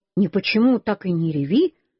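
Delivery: ordinary delivery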